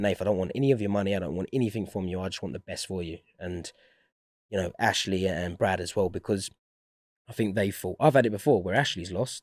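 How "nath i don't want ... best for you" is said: normal talking voice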